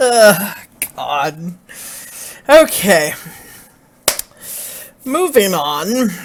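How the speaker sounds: words broken up by giggles and leftover laughter. Moving on in a video, still amused by its intro, laughing while talking. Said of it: "I'm still laughing about the intro".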